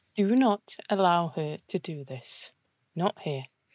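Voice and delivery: quiet aside, half-whispered. Walking over to a man at the table and speaking into his ear: half-whispering. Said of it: "I'm whispering in his ear".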